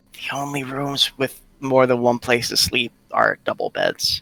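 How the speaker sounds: put-on, hushed stage half-whisper. Voicing a character telling another where to sleep: half-whispering in character. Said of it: "[name]'s gonna whisper to Riley".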